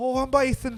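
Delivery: high, loud mock Irish brogue.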